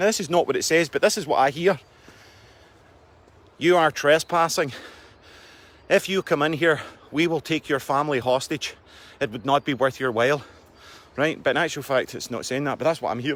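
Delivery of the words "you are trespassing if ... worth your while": put-on Irish accent, slower. Describing what a lit-up machine seems to say on approach, in an irish accent. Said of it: "it speaks to you in an Irish accent".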